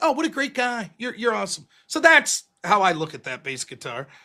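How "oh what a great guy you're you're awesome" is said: put-on insincere, gushing, sweet-talking tone. Acting out flattering an enemy: mock insincere flattery. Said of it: "the people that you're enemies, you're like".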